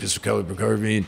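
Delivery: raspy, rough, creaking put-on voice. Describing how a man talks and quoting him, imitating his voice. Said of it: "in his voice, he talks like this".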